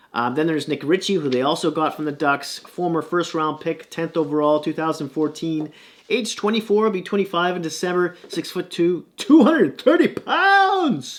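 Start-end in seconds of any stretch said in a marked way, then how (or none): 9.2-11.2 belted fight announcer voice, "pounds" stretched long. Listing a hockey player's height and weight: UFC announcer voice. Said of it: "There's my U F C announcer voice".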